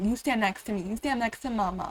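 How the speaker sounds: plain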